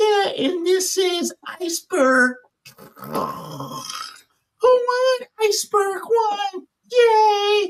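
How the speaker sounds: put-on very high, slow child's announcer voice. Retelling a son taping cars as an announcer, in a high-pitched voice. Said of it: "his voice was so high".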